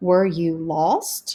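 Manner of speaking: pitch rises at the end of "lost". Practicing question intonation in a lesson: rising pitch on lost. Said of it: "Notice how our voice goes up before the question mark".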